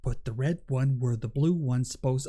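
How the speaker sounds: put-on flat monotone voice. Retelling a repeated line from the show: imitating Pedro Pascal's monotone. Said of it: "Pedro Pascal was so monotone in that".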